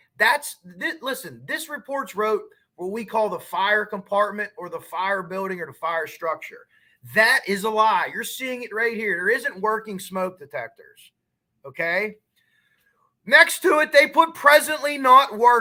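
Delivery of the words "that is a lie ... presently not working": angry, heated, loud raised-voice yelling. Showing listeners a fire report he calls a lie, yelling. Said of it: "I'm sorry if I'm yelling".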